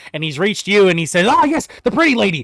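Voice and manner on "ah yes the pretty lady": desperate begging voice, higher pitch. Voicing a cornered dwarven cultist pleading for his life. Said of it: "trying to talk to people into getting his life spared".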